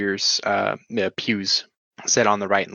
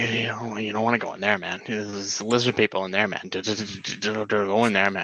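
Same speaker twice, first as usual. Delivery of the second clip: put-on drunk man voice. Voicing a stranger who gets in your face warning you: drunk man character. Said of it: "He's just like".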